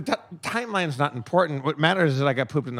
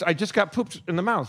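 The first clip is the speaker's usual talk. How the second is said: ordinary talk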